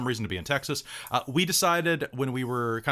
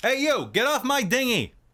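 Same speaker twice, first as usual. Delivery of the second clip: very high, fake, put-on Boston accent; 11 semitones higher, 4 dB louder than usual. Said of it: "or you could just be from Boston".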